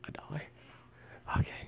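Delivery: whispered, very quiet, barely audible. Going through cards, the speaker whispers an aside to his brother. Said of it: "I'm just kind of whispering to my brother".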